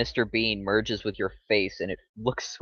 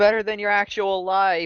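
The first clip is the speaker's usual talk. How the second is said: shrill, high, drawn-out scream; 10 semitones higher, 5 dB louder than usual. Answering a fleeing bartender in character: screaming back. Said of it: "I kinda scream back".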